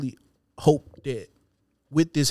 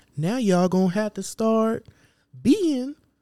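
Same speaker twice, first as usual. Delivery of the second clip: deliberate, slow, high, drawn-out put-on drawl; 8 semitones higher than usual. Imitating Kevin Samuels to another speaker: Kevin Samuels impression. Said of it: "Why you make him sound like that dude".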